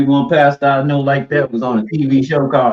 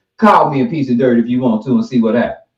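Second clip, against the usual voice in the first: ordinary talk, nothing marked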